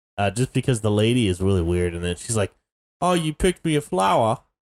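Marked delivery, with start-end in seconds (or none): 3.0-4.4 rough attempted British accent, pitched up. Retelling a scene, giving the lady's line in an attempted British accent. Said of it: "that's trying to be my British accent".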